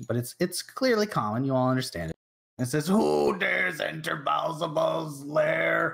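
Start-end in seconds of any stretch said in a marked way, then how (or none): 2.9-6.0 furious, gooey monster voice, slow, rough, lair drawn out. Narrating a game, voicing a creature calling out to the players: angry goopy monster voice. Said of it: "calls out in a very angry, like goopy".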